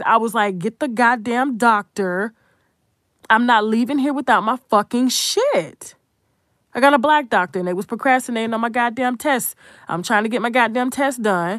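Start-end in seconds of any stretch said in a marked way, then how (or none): none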